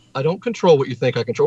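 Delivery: heavy, pointed, sarcastic comeback tone. Retelling a dispatcher's reply to a complaint about calls: imitating Tammy being sarcastic. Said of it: "Real sarcastic".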